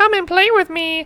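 very high, squeaky puppet voice. Retelling how he walked up behind people in the showroom; Elmo voice. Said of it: "the spot-on Elmo voice".

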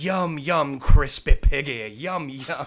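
slow, lofty, laid-on Southern drawl. Imitating an actor's highfalutin accent as Sally Langdon: imitating Sally Langdon's highfalutin Southern accent. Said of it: "the way that she does this accent is the most highfalutin thing".

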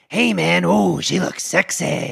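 gruff, rough, creaky puppet character voice. Pitching a movie idea, voicing the nerd's talking penis in a character voice. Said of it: "I like the voice you did".

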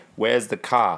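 New Zealand accent. Contrasting New Zealand and Australian accents, doing a New Zealand accent. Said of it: "New Zealand's like".

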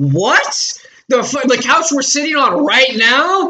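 almost shouting. Retelling her reaction when Jacob and Marshall told her, retelling almost yelling. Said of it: "And I'm almost yelling this".

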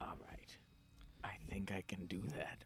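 fast, conspiratorial whisper.

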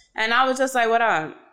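plain

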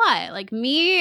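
light playful jokey tone. Retelling a scene where Ezra tilts his head: imitating Ezra being jokey. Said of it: "he's, like, a little jokey".

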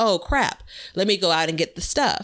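ordinary talk

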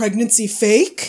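mock teenager voice. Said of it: "trying to be like a teen".

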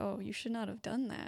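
whispered, in a put-on vampire voice. Voicing a vampire feeding on a player's neck: whispering as a vampire. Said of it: "she's gonna whisper".

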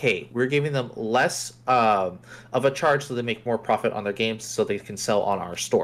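ordinary talk

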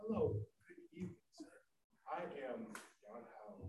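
swooping, digital voice-assistant voice. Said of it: "You sound like my Google digital assistant".

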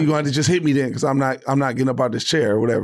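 usual speaking voice

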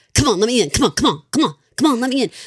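loud, fast New York mobster-style voice. Describing how June delivered the lines, imitating June's New York mobster voice. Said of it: "Like coming from just like New York mobster".

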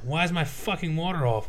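angry, pissed-off swearing outburst. Retelling an argument about the water bill, acting out being mad. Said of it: "And I'm like mad".

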